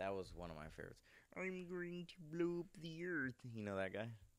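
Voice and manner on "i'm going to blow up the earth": very high-pitched cartoon alien voice. Talking about favorite cartoons with a friend, the speaker does a Marvin the Martian voice. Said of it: "you sound just like him".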